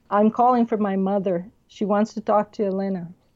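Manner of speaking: plain reading voice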